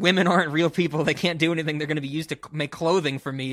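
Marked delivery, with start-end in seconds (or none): none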